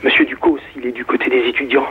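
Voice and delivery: hushed whisper. Recalling schoolchildren at seven talking about the director, retelling a whisper. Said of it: "on parlait tous en chuchotant du directeur".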